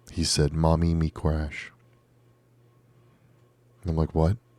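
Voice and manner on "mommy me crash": put-on small, babyish toddler voice. Mother retelling what her three-year-old said in the bath, little toddler voice. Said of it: "in his little toddler voice".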